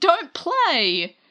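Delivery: high angry outburst with the word "play" drawn out. Retelling a story, speaker acts out a character losing his temper, mock-angry outburst. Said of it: "he loses his temper".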